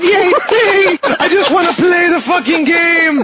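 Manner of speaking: high put-on voice, full of excited glee. Showing the voice they did everything in, imitating a high put-on voice. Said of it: "it's yay up here and I did everything in this voice".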